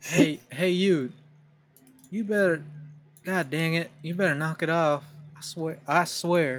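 put-on country Southern good-old-boy accent. Doing a put-on good old boy southern accent after discussing southern accents. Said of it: "they're not like a good old boy".

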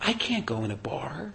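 scared, soft, slow little whisper.

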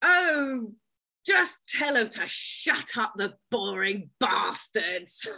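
big, loud, room-filling booming voice. Describing a woman from a documentary who works in the House of Lords, imitating a booming voice. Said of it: "And her voice booms".

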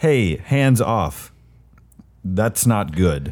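put-on, very broken English speech. Speaker retelling how one man speaks to another, in very broken English. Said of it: "speaks to him in like very broken English".

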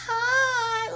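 very high-pitched, drawn-out "hi". Refusing to talk soft, doing a mock high soft-spoken "hi". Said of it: "I don't even talk like that on the regular".

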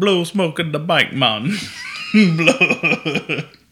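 loud, sort-of, vaguely Jamaican accent. The speaker repeats a line during outtakes: vaguely Jamaican accent. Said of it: "It kind of sounds Jamaican".

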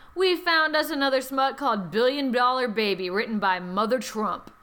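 ordinary talk, nothing marked

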